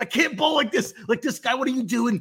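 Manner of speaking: acted-out shouting. Retelling being annoyed at another bowler on the lane: retelling own yelling. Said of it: "I started yelling".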